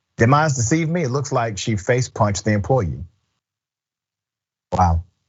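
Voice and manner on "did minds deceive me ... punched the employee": plain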